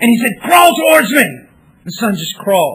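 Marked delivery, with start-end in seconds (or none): 0.4-1.3 loud, high-pitched, commanding tone. Retelling a father calling out to his son: retelling a scream like a madman. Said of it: "he screams like a madman at his son".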